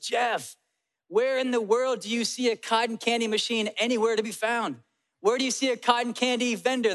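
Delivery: mild, half-yelled scolding tone. Retelling a brother-in-law slapping away cotton candy: imitating Brian yelling. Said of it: "he yells at me".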